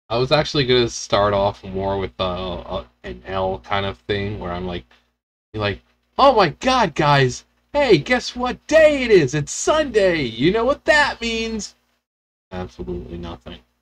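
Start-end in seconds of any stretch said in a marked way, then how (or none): 6.1-11.7 very high, gushing, fake super-excited voice. Showing how the video could have opened: fake super excited. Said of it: "super excited sounding".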